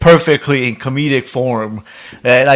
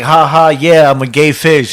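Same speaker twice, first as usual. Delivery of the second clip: mocking, sarcastic tone, slow delivery. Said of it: "said it sarcastically a couple of times".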